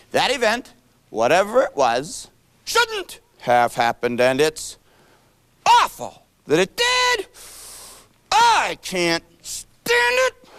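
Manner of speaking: swooping, sing-song horse voice. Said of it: "I can certainly say it the way a horse says it".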